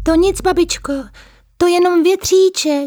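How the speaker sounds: thin, small little voice, pitched way up high. Narrator reads Mařenka's answer to the old witch: Mařenka's thin little voice. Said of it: "odpověděla tenkým hláskem Mařenka".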